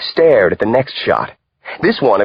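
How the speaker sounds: plain reading voice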